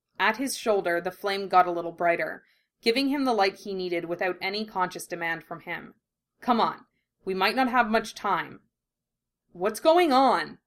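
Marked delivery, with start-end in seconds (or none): 9.6-10.5 insistent, pressing, demanding tone. Russell, hurrying to keep up as Ed sets off, questions him: demanding. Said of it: "Russell demanded".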